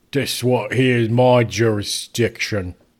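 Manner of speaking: put-on Cockney accent. Retelling what a character said, in a cockney accent. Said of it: "the guy with the Cockney accent".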